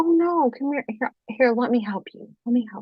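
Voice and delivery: acted, nice, coaxing tone like speaking to a child. Retelling how a man urged them to take the knife: imitating talking to a child. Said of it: "he tried to talk to me like I was a kid".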